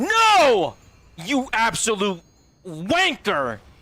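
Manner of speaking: very slow, long-stretched, swooping drawn-out yell. Reacting to a car alarm going off while playing: yelling. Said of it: "maybe I'm yelling too loud".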